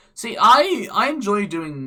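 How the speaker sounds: very loud, high break in the voice. Chatting away on a random tangent, voice cracks. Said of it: "That was a voice crack".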